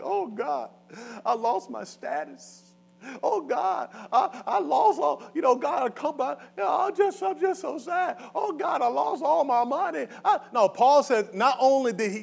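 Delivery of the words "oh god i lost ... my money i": high, fake sobbing, teary lament. Acting out someone wailing to god over lost status and money: mock crying lament. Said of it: "he wasn't out there crying like".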